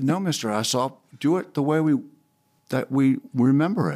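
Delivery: normal talking voice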